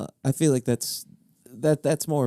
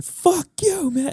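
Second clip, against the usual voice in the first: very high, loud shouted outburst; 6 dB louder than usual. Recounting a movie scene, acting out Al Pacino yelling. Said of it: "And he just starts yelling".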